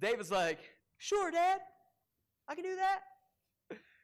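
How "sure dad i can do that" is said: very high-pitched, slow, little-guy character voice. Speaker acts out young David answering his dad, high-pitched young David voice. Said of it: "He's got a high-pitched voice".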